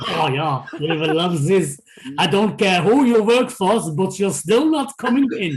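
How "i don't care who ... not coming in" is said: put-on Welsh-accented voice. Talking about getting into a match without a proper pass, in a welsh accent. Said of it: "that is the best Welsh accent".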